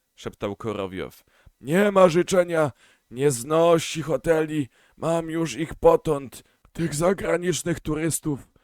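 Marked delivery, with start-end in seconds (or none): 1.6-8.5 intimate, put-upon, high, confiding grumbling complaint. Korowiow complains to the chairman about the foreigner, complaining confidentially. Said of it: "Intymnie użalił się".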